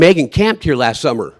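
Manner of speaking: ordinary delivery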